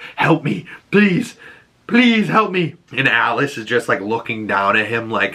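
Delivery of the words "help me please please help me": mock begging, high-pitched and desperate. Retelling a wounded man collapsing and begging a woman for help, acting out desperate pleading. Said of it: "he starts to like beg her and like is pleading like".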